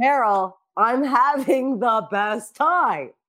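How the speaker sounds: sarcastic, very slow, very drawn-out drawl. Retelling a remark to a manager named carol: imitating own sarcastic tone. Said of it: "I was being sarcastic".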